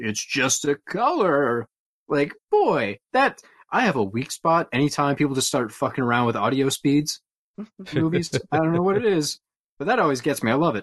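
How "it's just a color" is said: very slow, drawn-out, deadpan delivery. Reviewing a movie, the speaker quotes a line in a Tommy Chong deadpan impression. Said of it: "Tommy Chong deadpanning lines like".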